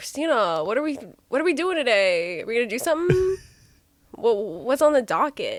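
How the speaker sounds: chatty, rambling, repetitive delivery. Someone asks you to do William, so address Christina in a William impression. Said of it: "do William".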